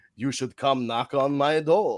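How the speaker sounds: low, slow, drawn-out vampire voice. Imagining a wrestler inviting someone to knock on his door: Dracula voice. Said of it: "I made him sound like Dracula".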